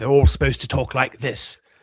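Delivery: theatrical stage English accent. Discussing how actors are made to talk in such movies, demonstrating a stage English accent. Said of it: "then it's stage English accent".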